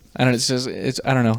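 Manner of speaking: plain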